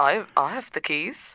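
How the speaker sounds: clumsy, unconvincing put-on Latvian accent. Retelling how a man posed as a Latvian woman, speak in a bad Latvian accent. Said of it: "I did a better accent than that now".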